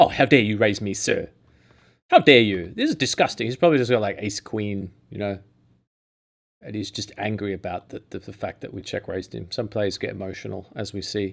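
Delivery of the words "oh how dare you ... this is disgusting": mock scandalised, loud, swooping indignant huff. Speaker acts out a poker player's reaction to being check-raised: mock-angry outrage. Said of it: "One of those angry snaps".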